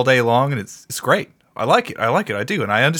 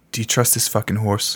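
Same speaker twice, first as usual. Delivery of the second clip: secretive, hushed whispered aside; 3 semitones lower than usual. Voicing a character on a forest path, addressing another character, whispering. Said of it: "Garrett whispers to Willy".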